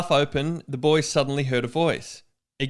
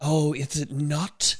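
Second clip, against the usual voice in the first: hissing snake voice, serpent-like delivery; 4 dB quieter than usual. Reading a story aloud, the reader gives the line in a snake voice. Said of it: "Good snake voice".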